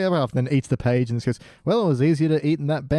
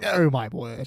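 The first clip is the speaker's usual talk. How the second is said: put-on exaggerated English soldier voice; 2 semitones lower than usual. Quoting the English army soldiers from a segment: imitating overly English soldiers. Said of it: "the overly Englishness of the English army".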